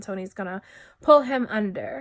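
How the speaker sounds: ordinary talk, nothing marked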